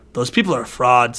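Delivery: mock deadpan delivery. Recalling a film scene and quoting a character's line, mimicking a deadpan delivery. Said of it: "just so deadpan".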